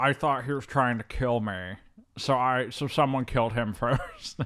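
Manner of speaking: put-on voice that sounds upset. Quoting the character's line from the film: imitating Giovanni Ribisi's film voice. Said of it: "he's like".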